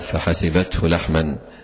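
normal talking voice

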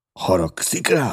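breathless, gasping. A bedridden man questions the narrator, gasping for breath. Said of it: "levegő után kapkodva".

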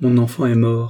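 icy, flat enunciation. A young woman, just seated in an armchair, answers a man's question coldly. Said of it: "articula froidement".

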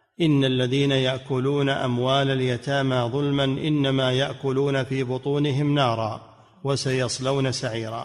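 plain

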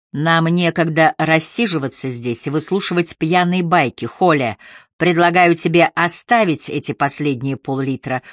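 plain

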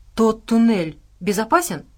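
plain reading voice

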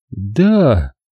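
sinking voice. Ginny answers a question about Shirley, in a sinking voice. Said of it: "упавшим голосом произнесла Джинни".

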